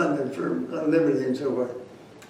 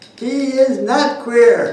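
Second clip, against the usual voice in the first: very loud, booming, high-pitched shout; 8 semitones higher, 11 dB louder than usual. Recounting what a man shouted back at the speaker's remark: retelling a loud shout. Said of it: "he says in the loudest voice".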